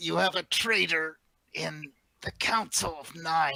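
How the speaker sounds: feeble, weak, croaked-out voice. Game master voices a character smashed against a wall, croaking. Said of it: "she just croaks out".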